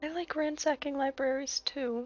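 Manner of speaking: speaking quietly and softly. Responding to what Kayleigh said: saying quietly. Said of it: "Just gonna quietly say".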